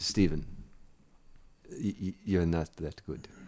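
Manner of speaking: put-on slow Eastern European accent. Retelling what a coach said to him: imitating Eastern European coach's accent. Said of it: "Nice way to work the accent in".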